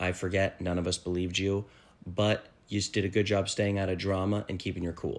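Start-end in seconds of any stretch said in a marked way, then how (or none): none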